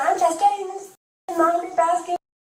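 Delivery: put-on high, worked-up screaming, acted out. Retelling what a woman screamed after being asked to leave: imitating someone screaming. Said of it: "she started screaming".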